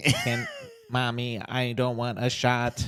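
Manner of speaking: voice-synthesizer style with sing-song delivery. Retelling what a three-year-old girl said, in a Stephen Hawking voice. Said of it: "that three-year-old sounds just like Stephen Hawking".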